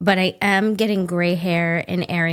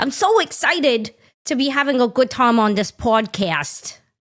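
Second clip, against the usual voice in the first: playful, high, put-on baby talk; 6 semitones higher than usual. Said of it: "that's not baby talk".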